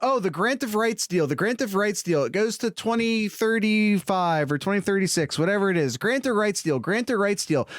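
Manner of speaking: usual speaking voice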